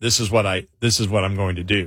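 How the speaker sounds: low, fast, deadpan and self-assured. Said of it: "I'm gonna say it with the".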